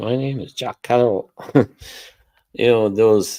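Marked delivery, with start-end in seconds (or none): 0.0-1.3 put-on Manchester accent, pitched higher. Quoting a line from a YouTube video clip; Jack Carroll's Manchester accent. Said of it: "I like that Manchester accent".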